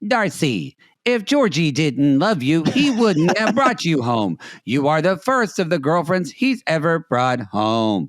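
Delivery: synthetic machine-voice readout, like a translator app. Retelling how the translator phone read out a sentence: imitating a robot voice. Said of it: "this beautiful robot voice goes".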